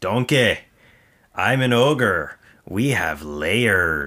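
slow celebrity voice, each word drawn out. Doing an impression of the actor voicing the ogre: Mike Myers impression as Shrek. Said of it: "here's my Mike Myers, um, impression".

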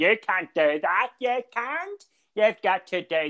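imitated bad, botched Northern Irish accent. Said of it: "speaking in a Northern Ireland accent".

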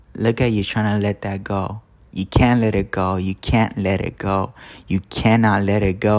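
ordinary delivery

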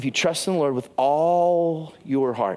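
heavy stress on the word all.

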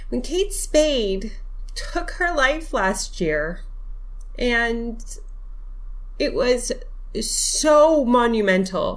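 halting, tearful, choked up, voice breaking. Podcast host speaking to listeners, about to cry. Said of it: "oh God, I'm going to cry".

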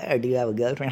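mock-teasing, put-on joking delivery. Retelling a question a man kept asking, imitating a joking tone. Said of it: "he was saying it like a joke".

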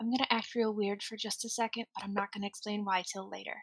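soft, very quiet, little hushed whisper. Leaning close to him while walking, acting out a little whisper. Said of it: "just kind of give a little whisper".

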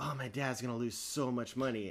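quiet, irritated, pissed-off annoyed grumble. Retelling a talk while smoking after minimum wage went up, imitating someone angry. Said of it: "and he was all pissed".

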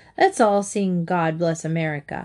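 ordinary delivery

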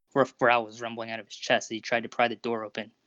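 ordinary delivery

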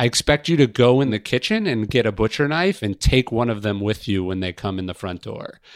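ordinary talk

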